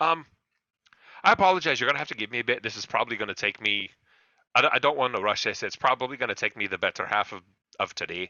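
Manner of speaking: put-on burly, hefty blacksmith-type voice with Scottish accent. Voicing a blacksmith who apologizes for needing time: Scottish blacksmith voice. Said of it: "burly Scottish, like, you know, like, blacksmith".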